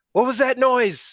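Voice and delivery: very high-pitched, loud yell. Shouting in character from the background: shouting. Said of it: "you hear me shout".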